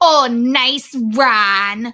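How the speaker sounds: put-on older Midwestern woman voice, name stretched long. Imitating a wife in a video reacting to her husband's sneeze: imitating an old Midwestern wife. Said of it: "that's how I get into that voice now".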